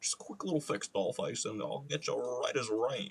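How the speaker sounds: put-on ladies' man rock-and-roll idol voice. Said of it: "It's my, uh, [name] impression".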